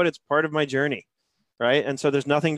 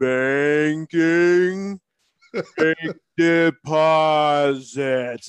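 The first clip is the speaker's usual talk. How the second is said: mocking, exaggeratedly over-slowed delivery; 4 dB louder than usual. Re-enacting his reply to complaints that he talks too fast, exaggeratedly slow. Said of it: "Let me slow this down for you".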